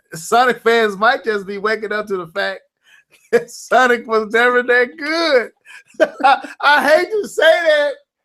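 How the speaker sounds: words strained by suppressed laughter. Agreeing with the other speaker's point, holding back a laugh. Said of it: "I'm smiling so hard because I'm trying not to laugh".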